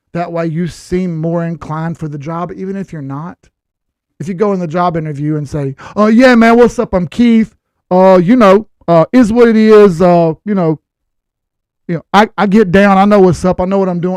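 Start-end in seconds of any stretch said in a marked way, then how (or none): 5.9-14.1 raised, sloppy, inarticulate rambling, filler after filler. Showing how not to talk in a job interview: inarticulate, sloppy interview talk. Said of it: "You can't put a sentence together".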